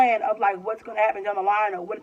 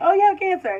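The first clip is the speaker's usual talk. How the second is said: put-on, very high, breezy, offhand, nonchalant delivery; 9 semitones higher, 4 dB louder than usual. Retelling how a nurse broke serious news: imitating a nonchalant tone. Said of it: "so nonchalant".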